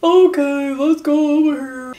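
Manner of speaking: slow, dopey cartoon voice. Demonstrating the effect of lowering the larynx: dopey cartoonish voice. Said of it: "you make it kind of dopey. Like, ... It's like a cartoonish type of sound".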